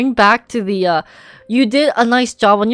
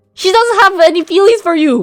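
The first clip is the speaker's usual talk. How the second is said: scolding tone, higher and louder; 10 semitones higher, 6 dB louder than usual.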